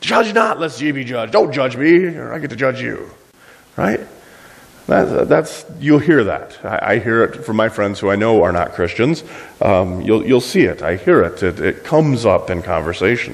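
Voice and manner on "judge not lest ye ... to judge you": snippy, attitude-laden tone. Imitating non-believers quoting the verse back: imitating someone saying it with attitude. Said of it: "they'll say it with attitude".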